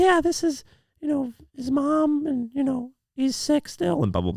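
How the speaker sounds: very high, sing-song put-on fake voice. Retelling phoning in sick as a kid, posing as the mom: high-pitched fake voice. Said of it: "I put my voice in a higher pitch".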